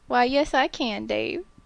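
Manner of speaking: put-on Southern accent with a drawl. A north carolina native, asked if he can talk with a drawl, shows a southern drawl. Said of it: "can you talk with the Southern drawl?".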